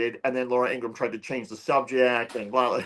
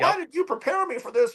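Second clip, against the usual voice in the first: put-on screaming, higher pitched. Imagining a screaming match with the producers after the show: imitating Laura Ingraham screaming. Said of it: "I can only imagine the screaming match".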